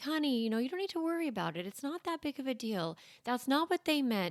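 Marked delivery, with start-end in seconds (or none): 0.0-3.0 sweet, soothing, really nice, kindly reassuring voice. Showing how a parent might reassure a worried child, saying it really nice. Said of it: "You can even say it like really nice".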